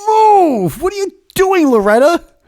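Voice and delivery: put-on grumpy old man shouting, very high, loud. Complaining about people stopping mid-aisle, yelling in a mock grumpy old man voice. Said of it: "it's very grumpy old man syndrome".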